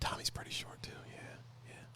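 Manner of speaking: quiet whispered voice. Joking about a short friend, whispering so he can't hear: whispering. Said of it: "I'm whispering so he can't hear me".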